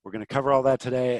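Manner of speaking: fast, rushed talk. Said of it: "I'm talking fast".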